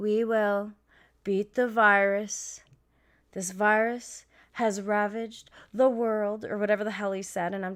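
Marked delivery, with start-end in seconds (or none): 0.0-6.4 very slow, flat, level, droning monotone. Imitating how a man he describes speaks, very slow monotone impression. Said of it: "he's very slow when he talks and is very monotone".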